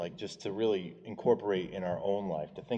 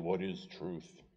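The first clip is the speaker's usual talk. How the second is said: put-on, dismissive, cynical, sarcastic tone; 5 dB quieter than usual. Quoting a dismissive question: imitating a sarcastic, cynical tone. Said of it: "He just says sarcastically and cynically".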